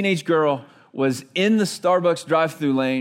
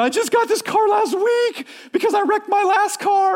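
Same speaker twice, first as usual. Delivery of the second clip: very high-pitched hysterical sobbing. Retelling the other driver after a crash with his truck: imitating a hysterical crying woman. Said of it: "she's hysterical and she's crying and she's going".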